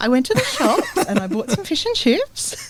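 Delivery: pitch climbs on shops and chips, upspeak. Demonstrating a speech pattern on a plain sentence, rising upward inflection. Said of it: "so it goes up towards the end".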